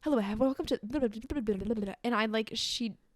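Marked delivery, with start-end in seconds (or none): 0.0-1.9 narration rattled off at top speed. Imitating an audiobook played at Mach five speed: imitating sped-up audiobook narration. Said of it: "listens to audiobooks at Mach five".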